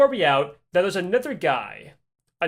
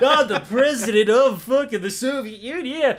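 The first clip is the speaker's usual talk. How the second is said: put-on drunken, high-pitched, boastful delivery; 6 semitones higher, 3 dB louder than usual. Retelling how Boris stumbled through the city: imitating drunk Boris. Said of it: "'cause he's all drunk".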